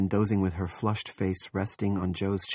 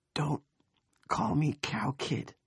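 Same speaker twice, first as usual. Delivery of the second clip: slow, drawn-out, high whisper; 7 semitones higher, 4 dB quieter than usual. After vomiting, a kid answers the man holding him: whispered. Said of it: "he whispered".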